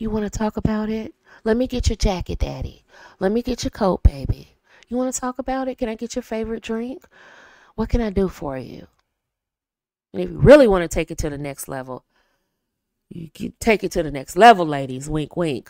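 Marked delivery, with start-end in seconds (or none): 0.0-8.9 lowered, softer, quieter voice. Showing how to greet a partner after a bad day: lowered voice. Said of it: "So now you wanna lower your voice".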